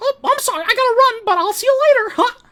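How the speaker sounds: very high-pitched and loud. Playing with a child who can't find him, saying goodbye: Mickey Mouse voice. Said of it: "I would basically do my Mickey Mouse voice".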